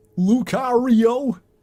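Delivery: loud, very high-pitched character voice. Showing how a character talked in a fan read-through: imitating how Lucario talked. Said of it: "And then Lucario talked like this".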